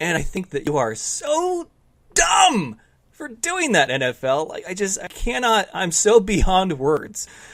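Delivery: high-pitched, heated rant.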